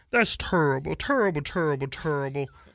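put-on froggy sports-pundit voice. Showing a Barkley impression while having a cold: Charles Barkley impression. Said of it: "all I could say is "terrible."".

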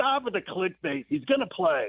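light, high yelling. Retelling how someone started yelling at him, retelling someone yelling. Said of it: "he just started yelling at me".

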